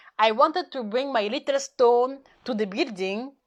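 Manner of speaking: normal talking voice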